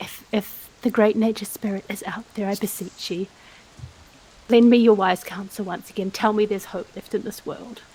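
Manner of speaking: soft whispered, pleading tone. Praying to a nature spirit while staring at the sky: whispering a prayer to the sky. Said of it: "I'm just gonna whisper out".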